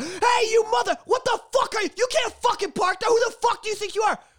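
screamed rant. Speaker retells a man yelling at him over his parking, retelling someone screaming. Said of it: "screaming at the".

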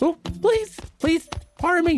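small, squeaky voice. Narrator voicing a young girl shuffling past with a tray of sandwiches: small, squeaky voice. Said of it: "you hear a small, squeaky voice come from behind you".

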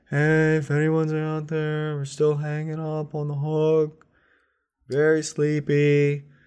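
faint, very high, distant call. Voicing captives left hanging on a hook: faint calling from afar. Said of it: "hear the faint callings".

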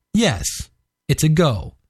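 ordinary talk

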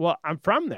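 put-on thick, laid-on British accent. Retelling meeting a friend's girlfriend: imitating a thick british accent. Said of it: "she has this thick British accent".

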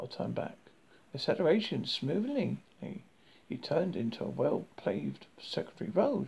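plain reading voice

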